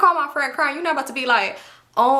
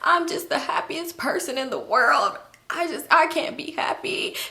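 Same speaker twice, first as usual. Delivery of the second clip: mock tearful words pushed out through sobs; 4 dB quieter than usual. Retelling an argument in which a wife starts crying: imitating a woman crying. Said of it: "She's just crying".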